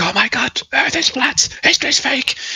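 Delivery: lively, very animated, excited, pitched way up. Speaker showing another speaker how someone sounds, very animated. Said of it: "speak really animated and you're like".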